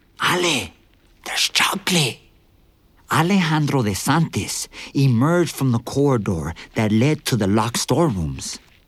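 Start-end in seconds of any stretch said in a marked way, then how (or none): 0.2-2.2 loud stage whisper pitched to carry. A narrator reads a man returning with two mugs, calling to Ale in a loud whisper. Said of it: "he said in a loud whisper".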